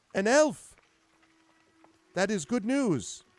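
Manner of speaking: very high, very loud voice. Storyteller voicing the one holding the torch, answering news of an elf; slightly higher voice. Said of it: "her voice is a little higher".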